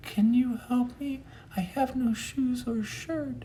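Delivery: very high-pitched voice, pitched way up. Retelling what a shuffling stranger asked him, in a really high voice. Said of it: "In a really high voice".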